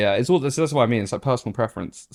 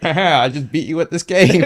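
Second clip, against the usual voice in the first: put-on nerdy school kid voice, higher and louder; 6 semitones higher, 6 dB louder than usual. Refusing to do a voice, the speaker mocks how they'd sound: nerdy school kid voice. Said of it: "I sound like the nerd you kid at school who's like".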